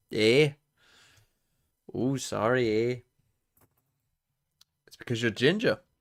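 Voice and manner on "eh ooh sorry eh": very slow, joking, put-on Canadian accent. Joking that viewers think the speaker sounds Canadian: joking Canadian accent. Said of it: "I don't sound Canadian at all".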